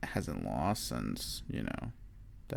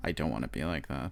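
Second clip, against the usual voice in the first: usual speaking voice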